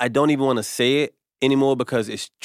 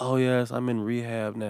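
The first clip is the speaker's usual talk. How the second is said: mocking smug show-off tone, quieter; 6 dB quieter than usual. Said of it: "make trauma trendy".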